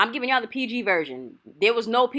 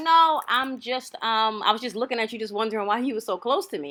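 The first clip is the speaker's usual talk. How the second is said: usual speaking voice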